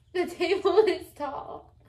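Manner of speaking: emphatic repeat. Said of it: "No, tall".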